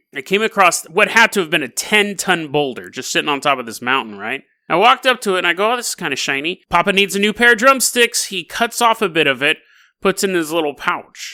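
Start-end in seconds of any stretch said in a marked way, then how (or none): none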